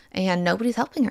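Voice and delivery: ordinary talk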